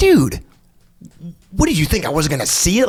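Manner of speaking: mock exasperated tone. Retelling an instructor's reaction to his landing: imitating someone frustrated. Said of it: "he's so frustrated".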